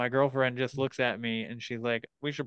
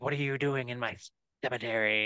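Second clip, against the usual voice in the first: hissing, spoken in a hiss. Telling about a man met in a cemetery, imitating a hissing man. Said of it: "and he's hissing".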